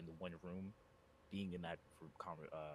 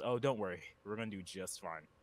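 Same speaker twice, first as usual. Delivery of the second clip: sinister, menacing, smiling reassuring tone; 7 dB louder than usual. Voicing a character who reassures a commander about the mission: sinister smiling. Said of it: "a very sinister s-, just smile creeps across his face and goes".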